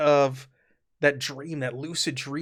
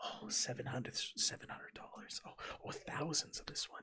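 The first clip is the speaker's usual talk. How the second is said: mimicked mutter under breath, much quieter; 18 dB quieter than usual. Describing a man counting the price of each piece he handles: imitating him muttering under his breath. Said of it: "under his breath talking about dollar amounts".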